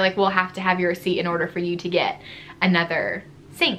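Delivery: ordinary delivery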